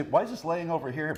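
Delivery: ordinary delivery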